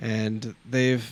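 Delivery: ordinary delivery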